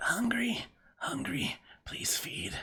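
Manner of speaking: tiny dragon's faint hissing voice. Describing a little smoke dragon speaking Draconic, the storyteller gives its faint hissing dragon voice. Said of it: "you hear this faint hissing from this little smoke dragon".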